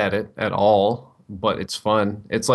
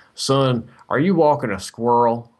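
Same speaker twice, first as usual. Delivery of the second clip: slow rural drawl; 3 semitones higher than usual. Retelling what a redneck guy in a huge truck asked: imitating a redneck guy. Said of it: "some really big redneck guy".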